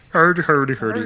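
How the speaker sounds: high, sing-song mock Swedish gibberish.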